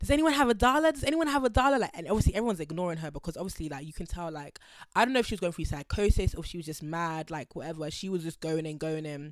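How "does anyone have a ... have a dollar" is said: put-on loud, high, frantic begging shout. Retelling a woman on the subway asking everyone for a dollar: imitating a woman shouting. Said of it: "she's shouting at everyone like".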